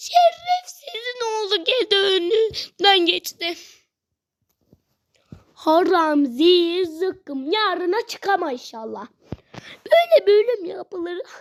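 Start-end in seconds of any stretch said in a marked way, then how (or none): 0.0-9.1 slow, furious delivery, close to tears. Gamer reacts as an enemy passes by during a hard level: furious, near tears. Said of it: "Sinirden ağlayacağım".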